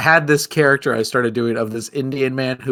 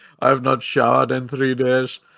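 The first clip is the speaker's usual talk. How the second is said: mopey, melancholy put-on Indian accent. Doing a comedic bit with a co-performer, melancholy Indian accent. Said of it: "doing a melancholy Indian impression".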